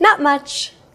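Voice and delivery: bright upbeat casual tone. Showing how to answer "What's up?": cheerful voice. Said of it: "use a cheerful voice as you say".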